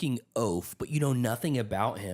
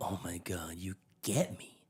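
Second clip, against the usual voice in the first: exaggerated, over-the-top, soft, fake adoring gushing; 4 semitones lower, 7 dB quieter than usual. Imitating a book character's reaction to a small gift: mock overdramatic gushing. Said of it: "she makes it sound like it's this really profound gesture".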